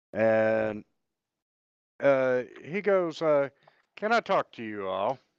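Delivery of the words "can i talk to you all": severe, stern small-town sheriff tone. A game master voices a sheriff approaching the players, in a stern sheriff voice. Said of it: "In that stern sheriff voice that they have".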